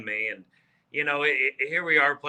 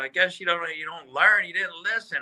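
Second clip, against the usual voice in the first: put-on, pitched-up yelling as if from afar; 6 semitones higher than usual. Retelling what a guy on the golf course yelled out: imitating someone yelling. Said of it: "he yells out".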